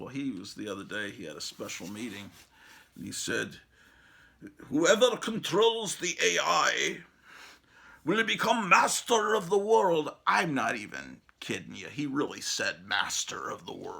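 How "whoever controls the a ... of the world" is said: put-on raised, pitched-up German accent. Retelling what a man said at a special meeting, quoting him in a German accent. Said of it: "in his German accent".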